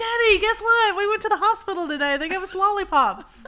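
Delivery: put-on high, loud, excited child voice. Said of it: "they're excited".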